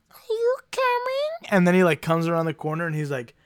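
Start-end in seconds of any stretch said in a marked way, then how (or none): 0.1-1.5 very high, tiny little kitten voice. Imitating a cat that seems to say a phrase, tiny cat voice. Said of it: "But in a little cat voice, so it's like".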